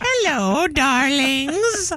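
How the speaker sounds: high, laid-on put-on old lady voice. Retelling a woman faking being elderly as she arrives, the speaker uses an old lady voice. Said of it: "An old lady voice".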